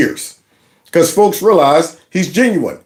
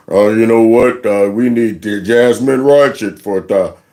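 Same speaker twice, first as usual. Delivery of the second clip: mock slowed-down voice, very deep with more bass; 7 semitones lower than usual. Mocking a politician's speech with a voice modulator: David Hogg voice slowed, more bass. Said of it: "put a voice modulator on your vocal cords to make you have a little more bass... Slow it down".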